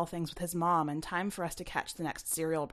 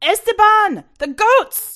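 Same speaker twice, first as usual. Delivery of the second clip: very high, loud, shrill scream with voice cracking; 17 dB louder than usual. A mother screams for her son, voice cracking. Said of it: "When his mother screamed, her voice cracked".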